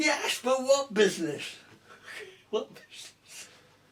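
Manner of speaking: shrill squeak, very high and loud. Retelling what a man asked him about someone's business, in a squeaky voice. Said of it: "he got this squeaky voice".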